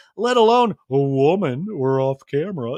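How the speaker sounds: weird deep joking voice. Speaker retells Kyle making a joke, in Kyle's weird deep voice. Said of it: "Kyle does this weird deep voice here".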